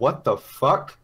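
very loud, full-force, blurted exclamation. Recounting what a character exclaims on seeing this, very loud exclamation. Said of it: "She very loudly says".

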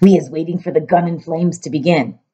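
ordinary delivery

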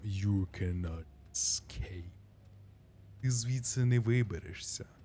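low, grave, serious, solemn rat voice. Speaker reading a game rat's line aloud: serious rat voice. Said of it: "Пацюк так серйозно говорить таким голосом".

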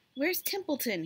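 insistent, demanding, high-pitched. In his pen, seeing people approach and needing to act quickly, demanding. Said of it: "he demanded".

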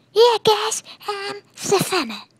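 very high, loud, slow, drawn-out character voice. Acting out a made-up character for a friend: Cartman voice. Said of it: "That was Cartman".

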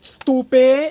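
very loud yell. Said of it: "yelling at me, and she's like".

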